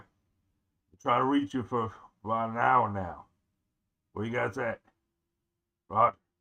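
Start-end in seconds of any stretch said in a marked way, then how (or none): 0.0-4.8 loud put-on character voice, calling out. A player voices a character reaching the others after an hour of silence: deeper character voice. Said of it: "I forgot how to do his voice. It's a lot more deeper".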